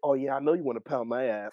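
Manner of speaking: usual speaking voice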